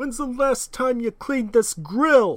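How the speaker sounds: shrill, high-pitched yell. Performing a bit after admitting a bad British accent, as loud Gordon Ramsay from the Bronx. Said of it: "I was just like being loud".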